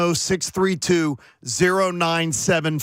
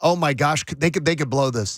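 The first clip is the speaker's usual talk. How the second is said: mock nervous fretting, lower; 3 semitones lower than usual. Imitating a spouse fretting aloud during a close game: imitating a nervous fan. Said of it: "Can't have you doing the".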